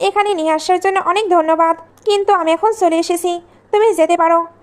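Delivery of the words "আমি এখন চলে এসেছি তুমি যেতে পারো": ordinary delivery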